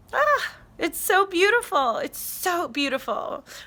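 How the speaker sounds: high, tearful, choked up, about to cry. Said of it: "Oh, I'm gonna cry now".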